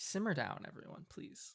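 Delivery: breathy, hushed, calming near-whisper. Voicing Alina, asking an angry group in character: calming plea in character. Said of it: "says Alina in character".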